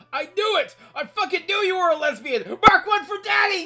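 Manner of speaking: put-on shouting. Retelling a father's reaction on being introduced: imitating dad shouting. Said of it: "He started shouting".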